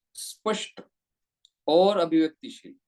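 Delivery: short pause after स्पष्ट. Explaining pace, pause and punch, with a short pause after 'स्पष्ट'. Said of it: "मैंने स्पष्ट और और के बीच में थोड़ा टाइम रुका मैं".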